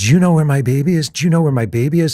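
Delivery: imitated woman screaming. Retelling a woman's reaction on a phone call, imitating her frantic screaming. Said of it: "And she's crying".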